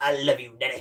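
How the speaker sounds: put-on kid voice like a smoker. Describing a favorite movie scene, retelling a kid's line in a smoker-sounding kid voice. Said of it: "the kid sounds like a smoker".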